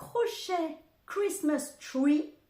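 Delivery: exaggerated fake English accent. Naming a crochet pattern from a knitting channel, in an attempted English accent. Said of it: "Mon super accent anglais".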